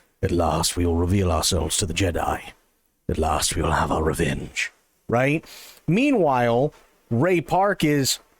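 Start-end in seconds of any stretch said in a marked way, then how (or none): 0.2-4.7 very low, gravelly villain voice. Showing how the Star Wars villain was voiced: Darth Maul villain voice. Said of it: "he can lower it and make it a, you know, a bit gravelly".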